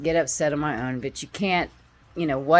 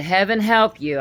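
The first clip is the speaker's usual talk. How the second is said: mock raised authoritative voice, higher; 4 semitones higher than usual. Retelling what was proclaimed about bad energy: retelling own raised, authoritative voice. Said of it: "I said it with authority in my voice, with my voice raised".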